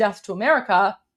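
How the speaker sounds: ordinary talk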